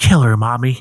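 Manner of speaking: put-on eerie voice of a small child. Retelling a film scene where the killer speaks as her son: imitating a child's voice. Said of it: "Jason's voice in her head because she goes".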